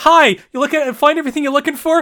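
very high, perky shop-clerk customer-service voice. Describing meeting Thistle, the speaker does Thistle's customer-service voice. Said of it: "She has very, like, customer service voice in my head".

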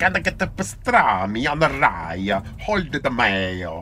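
put-on Italian accent. Performing the phrase on demand in a speed test: Italian accent.

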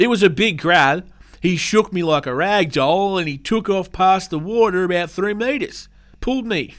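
put-on Australian outback farmer accent. Reading a news report, voicing the crocodile attack victim's quote in an australian farmer accent. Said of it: "I'll do my best Northern Territory Australian farmer accent".

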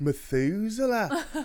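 very high, loud drawl stretching "Methuselah". Imitating how the main character's voice says Methuselah, drawn out. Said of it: "he does this draw on it and he's like".

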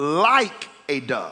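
like hit hard with strong stress. Reading a scripture passage aloud, emphasis on like. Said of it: "let me just put emphasis there".

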